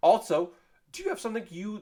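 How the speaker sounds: voice breaking and cracking up high. Asking the listener a question, voice cracking. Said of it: "my voice cracked there".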